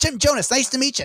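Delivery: very high pitch, joking, messing around. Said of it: "He's like".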